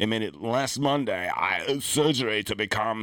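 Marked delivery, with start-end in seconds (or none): 1.3-3.0 put-on Austrian accent. Talking about the Terminator star, slipping into an Arnold Schwarzenegger Austrian accent. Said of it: "You have to talk like Arnold. ... I just went into like a Hans and Franz there".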